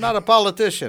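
high, loud, bad fake New Yorker accent. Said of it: "what do you call that accent right there that you're doing".

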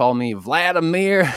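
put-on Tennessee accent. Retelling how people there said his name, in a Tennessee accent. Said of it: "That is a pretty good Tennessee accent".

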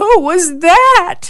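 put-on quavering, trembling, very high small child voice. After a woman puts them back to bed, a three-year-old asks: trembling voice. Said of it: "she heard the three-year-old say with a trembling voice".

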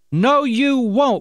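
very high, loud outcry. A boy told his leg may be amputated answers the doctor, crying out. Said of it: "cried out the boy".

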